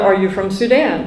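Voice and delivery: ordinary talk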